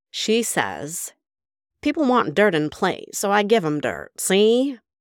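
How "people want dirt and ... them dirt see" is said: put-on high, swooping old Hollywood accent. Sharing a quote from an article about the star with listeners, in a Mae West accent. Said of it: "I have to read it in the Mae West accent".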